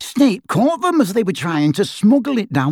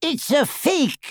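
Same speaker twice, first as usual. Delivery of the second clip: rasped, hoarse-edged, scraping voice; 7 semitones higher, 4 dB quieter than usual. Griphook answers Ted as the goblins laugh, rasping. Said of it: "rasped Griphook".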